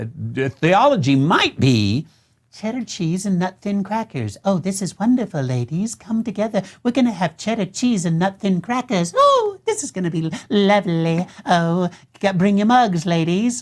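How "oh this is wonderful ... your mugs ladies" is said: effusive, gushing hostess voice. Mocking women's Bible studies while joking about theology, women's Bible study impression. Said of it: "that's my uh, impression of women's Bible studies".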